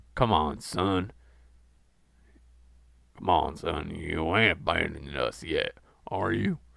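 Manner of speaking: voice dropped down low and deep. Reading a story aloud, voicing John urging the narrator: low, deep voice. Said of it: "said John with a low, deep voice".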